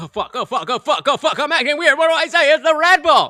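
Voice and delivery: acted frantic, flustered panic. Retelling how she reacted when caught out: imitating a panicked woman. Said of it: "She's like".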